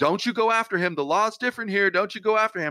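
very high, shrill, urgent yelling. Recounting what a woman yelled at him, retelling a yell. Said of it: "she's yelling at me".

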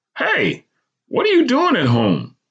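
very high, swooping, incredulous, disbelieving exclamation. In a memoir, a doctor examining the narrator asks in disbelief. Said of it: "he questioned in disbelief".

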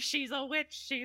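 mock yelling. Picturing Andy dancing around his apartment, imagining someone yelling. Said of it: "Just yelling".

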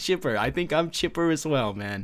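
dry, sarcastic, with feigned good cheer. [name] answering co-host Braun's greeting after a hard loss, sarcastic. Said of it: "I'm being sarcastic".

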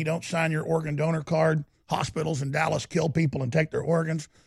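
normal talking voice

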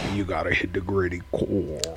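put-on deep country accent, very low, soft and hushed. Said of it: "his country accent was so deep".

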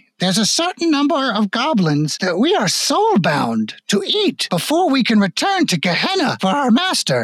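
put-on very high, swooping old goblin woman voice. As a player unsheathes a spear, the game master speaks as the old goblin lady, elderly goblin woman voice. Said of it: "And it's actually the very, very elderly goblin woman in the wheelchair going, / and all appearance of her being a frail old woman starts to melt away as her body starts to twist and extend into a lar".

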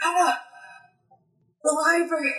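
breathless, gasping, panting, out-of-breath words. A game narrator voices Six bursting through the door to Anna, panting. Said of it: "he's just like panting".

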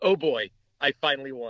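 ordinary talk

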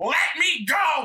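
high-pitched, screamed-out voice. Recounting wrestling with a big man, retelling a scream. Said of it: "I literally screamed".

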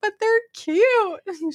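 very high-pitched, tearful, crying voice. Retelling what she said about the cow, imitating someone crying. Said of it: "She's like crying".

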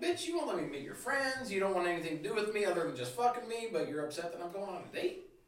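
high, play-acted, heated, indignant, accusing angry rant. Retelling how a girl reacted to news of a date: imitating someone getting upset. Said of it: "She got all shitty".

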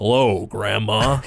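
deep studly voice. Retelling a grown-up Arthur greeting his grandmother, in Arthur's deeper voice. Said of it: "he also has a deeper voice".

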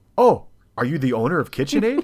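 loud, demanding tone with full entitlement. Speaker retells a frustrating customer service exchange: mock entitled Karen demand. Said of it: "I went full Karen at this point".

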